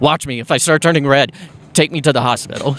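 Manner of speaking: normal talking voice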